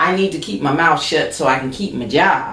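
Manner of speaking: ordinary talk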